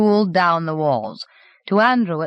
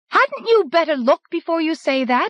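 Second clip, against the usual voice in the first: sharp, very high-pitched voice; 11 semitones higher than usual. A mother challenges the hotel manager in front of a crowd, in a high, sharp voice. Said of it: "said in a high, sharp voice".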